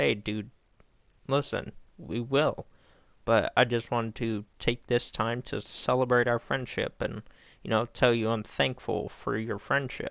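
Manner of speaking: plain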